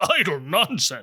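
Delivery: slightly gruff voice. Repeating a phrase a woman said, the speaker imitates her slightly gruff voice. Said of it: "She puts a bit of gruff voice as she says it".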